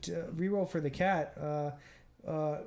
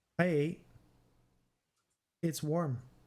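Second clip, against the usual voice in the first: put-on talking-cat character voice. Voicing a cat found on a boat answering questions, cat impression. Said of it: "one of the best cat impressions".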